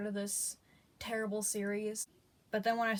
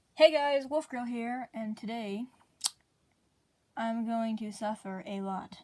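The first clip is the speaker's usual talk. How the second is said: weary flat voice, louder; 4 dB louder than usual. Opening a video after a long day: lifeless tired voice. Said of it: "If I sound lifeless or depressed".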